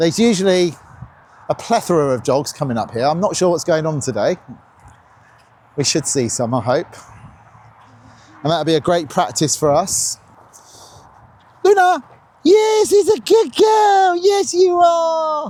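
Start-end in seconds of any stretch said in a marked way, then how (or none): 11.6-15.5 very high, very slow, stretched are. Speaker praises the dog Luna during training; high excited Disney voice. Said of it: "Is that Disney enough?".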